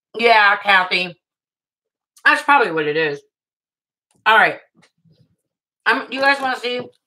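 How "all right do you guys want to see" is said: chewing, mouth full, higher pitch. Speaker about to show viewers how they package, talking while eating grapes. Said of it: "Sorry, I'm eating grapes".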